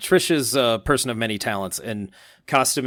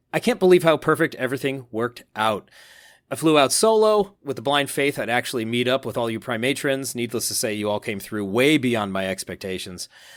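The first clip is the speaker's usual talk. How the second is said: ordinary delivery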